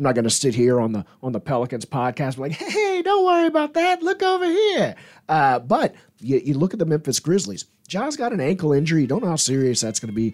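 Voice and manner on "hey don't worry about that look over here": high, mock, mindless rah-rah cheerleader voice. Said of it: "I'm not trying to be a, a rah-rah, mindlessly guy".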